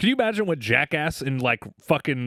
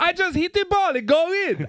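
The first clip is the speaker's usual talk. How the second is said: put-on very high, thrilled, excited Russian accent. Retelling a golfer's words to the group after a hole in one, mock-excited Russian accent. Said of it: "him being like a Russian and being excited".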